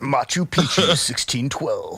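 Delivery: very loud, booming, swooping TV narrator voice. Listing places and dates like a documentary, Ancient Aliens narrator voice. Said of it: "if you say it with that voice".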